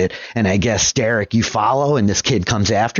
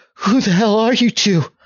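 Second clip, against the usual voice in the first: very high, fear-stricken, terrified outburst; 11 semitones higher than usual. Voicing a kid who wakes to find strangers: terrified. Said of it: "there's, like, terror in this kid's eyes".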